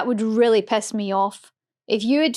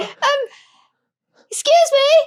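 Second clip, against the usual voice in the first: mock posh panicked voice, higher and louder; 4 dB louder than usual. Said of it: "when I panic, I turn really posh".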